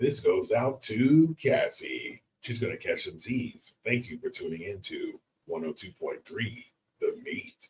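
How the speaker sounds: whispered, hushed, murmuring late-night radio dj voice. Signing off to cassie, who is going to get some sleep: late-night radio voice. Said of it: "we should use late night radio voice".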